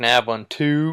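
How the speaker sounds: the word "two" given heavy, punched stress. Recalling how the speaker talked to him, strong stress on two. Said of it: "I'd just emphasize the two".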